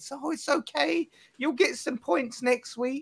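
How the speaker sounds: very high, soft, gentle sweet-talking voice. Teasing Errol about going easy on Pete, imitating Errol's soft nicey voice. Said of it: "that soft, nicey voice with your kids".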